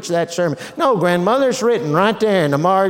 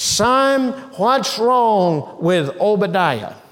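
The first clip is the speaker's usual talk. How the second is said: usual speaking voice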